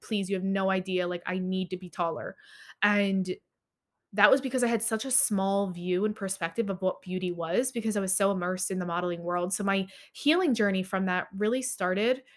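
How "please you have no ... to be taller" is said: imitated tearful, crying, begging tone. Retelling begging parents for bone surgery: retelling own crying plea. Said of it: "crying and, like, begging them".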